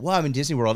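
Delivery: acted-out starry-eyed, awed, wonder-struck voice. Retelling a first visit to Disney World: imitating own awed voice. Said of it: "kind of in awe of".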